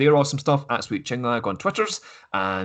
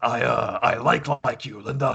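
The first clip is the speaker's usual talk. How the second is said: big, gruff voice, taken slow. Imagining a wrestling boss telling his wife he likes her: Vince McMahon big gruff voice. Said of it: "Vince McMahon and his big gruff voice".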